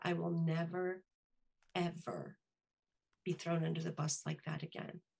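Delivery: hushed, deliberate, resolute and quiet. Retelling a firm warning to a boss: quiet, intentional tone. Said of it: "in my most quiet, intentional tone".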